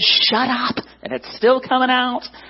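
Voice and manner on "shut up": higher-pitched self-directed yell. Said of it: "I'm yelling at myself in my head".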